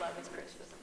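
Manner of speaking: soft, whispered laugh under the breath.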